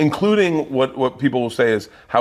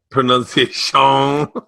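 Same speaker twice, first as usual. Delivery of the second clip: put-on Cajun voice, pitched higher and louder; 3 semitones higher, 3 dB louder than usual. Speaker repeats a word while others comment, in Adam Sandler's Cajun Man voice. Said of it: "You're doing the Adam Sandler, Cajun man".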